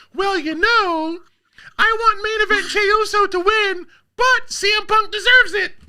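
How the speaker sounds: mock girly woman voice.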